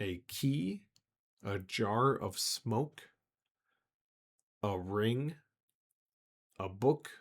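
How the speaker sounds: deliberately slowed, very slow pace. The DM repeats the item list at a player's request, much slower. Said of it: "much slower".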